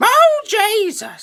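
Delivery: screaming. Starting a story by acting out its end: screaming. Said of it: "were you screaming".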